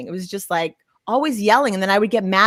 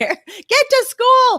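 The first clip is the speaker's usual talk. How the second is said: very high, put-on screaming; 5 dB louder than usual. Recalling shouting downstairs at Dawson before school, retelling their own screaming. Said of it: "I'm like just screaming downstairs".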